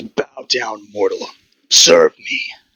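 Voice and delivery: growling, roaring voice. Voicing a dark figure demanding service: growlish roar. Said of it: "a sort of growlish roar".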